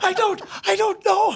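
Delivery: high-pitched, tearful voice, near crying. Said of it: "I'm crying".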